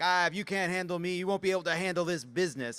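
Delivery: dismissive, high-pitched, taunting jerk-like tone. Imagining what a jerk says as someone leaves crying: imitating a jerk. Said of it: "a jerk says as you run out".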